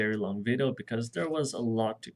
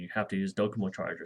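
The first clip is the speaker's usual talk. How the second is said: play-acted, very threatening, menacing delivery; 3 semitones lower than usual. Retelling what a woman said about chargers when buying a phone, mock-threatening tone. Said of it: "she said in a very threatening tone".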